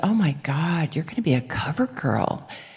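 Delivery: put-on muttering under the breath. Retelling what the agent said looking at the pictures: imitating someone saying it under her breath. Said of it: "it was under her breath".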